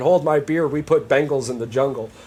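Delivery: normal talking voice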